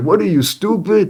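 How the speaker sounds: put-on high-pitched tough-guy voice, Chicago street accent, tossed off. Speaker retells Rahm Emanuel shutting down a question: Rahm Emanuel impression. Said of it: "Chicago, you know, street accent or whatever".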